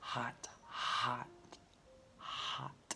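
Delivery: soft, whispered voice.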